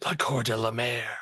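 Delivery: whispering to himself. Voicing a character who whispers a name to himself: whispering to himself. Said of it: "Walber just whispers to himself".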